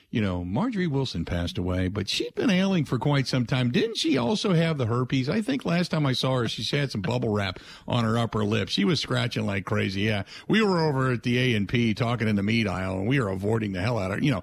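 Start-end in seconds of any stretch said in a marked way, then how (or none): none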